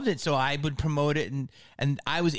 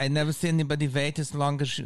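deliberately rough, badly done put-on voice. Retelling what a club owner said after a long wait: terrible Jamie Masada impression. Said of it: "it's a terrible impression".

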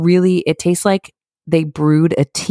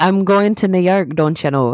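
put-on Irish accent; 3 semitones higher than usual. Coaching another speaker into a put-on accent: Irish accent. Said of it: "get into your Irish accent".

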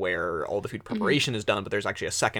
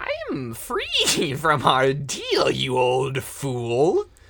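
high, loud cackling throughout, "fool" drawn out; 6 semitones higher, 6 dB louder than usual. Narrator voicing a creature who speaks to the digger, cackling. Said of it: "And cackles and says".

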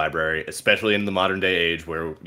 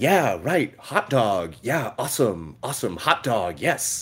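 slow, drawn-out put-on American accent; 5 semitones higher than usual. Showing off their american accent when people ask to hear it. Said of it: "do you want to hear my my American accent?".

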